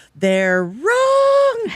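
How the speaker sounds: mock full-volume yelling. Retelling how a lecturer answered a woman's question, imitating someone yelling at full volume. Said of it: "he yells at the top of his lungs".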